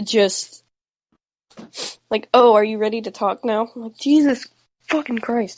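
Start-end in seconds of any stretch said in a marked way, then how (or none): 2.3-3.7 mock-sarcastic tone, spoken faster. Quoting a text someone sent, in a mock-sarcastic tone. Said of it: "the most sarcastic tone you can text".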